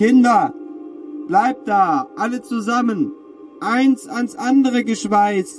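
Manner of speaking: very high scream with voice cracking, breaking. The mother, heading to the south door during the storm, screams to the children, voice cracking. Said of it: "mit sich überschlagender Stimme".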